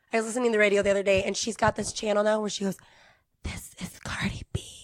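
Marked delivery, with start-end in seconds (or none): 3.4-4.6 put-on ASMR whisper, quieter. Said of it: "I'm gonna be [name] in her A S R voice".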